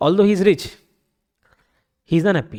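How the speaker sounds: short comma-like pause right after "rich". Explaining that a comma works as a break in the sentence: pause after rich. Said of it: "तो मैं जो बीच में पॉज ले रहा हूं ना, वो कॉमा कर देता है".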